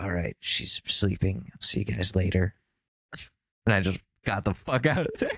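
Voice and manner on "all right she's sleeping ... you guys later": quiet, hushed voice. Retelling leaving a treatment area where everyone stared, retold in a hush. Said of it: "And I was quietly just like".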